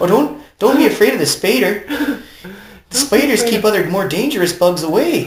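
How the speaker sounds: put-on Irish accent, pitched high. Recalling Fluttershy in an episode, doing Fluttershy line in Irish accent. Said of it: "Why am I doing it with an Irish accent?".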